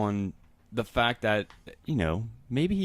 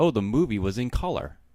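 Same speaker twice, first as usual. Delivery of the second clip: usual speaking voice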